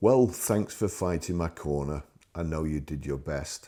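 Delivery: loud, sarcasm-laced delivery. Recounting a reply to a man giving a month to sign, retelling a sarcastic reply. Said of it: "I said sarcastically".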